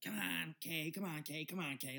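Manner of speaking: put-on pestering, nagging, complaining whine. Retelling how a woman pulled his friend away: imitating someone whining. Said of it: "just bitching".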